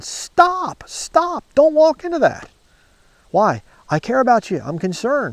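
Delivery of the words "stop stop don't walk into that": mock very high, drawn-out, urgent screaming yell. Acting out warning someone about to walk into a trap: acting out yelling and screaming. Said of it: "I'm gonna be yelling and screaming".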